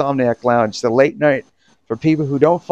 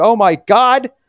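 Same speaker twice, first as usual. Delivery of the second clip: put-on excited, freaking-out voice, higher and louder; 9 semitones higher, 4 dB louder than usual. Imitating another person reacting to a caller: imitating Jim freaking out. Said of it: "look at Jim's, like, freaking out. He's like".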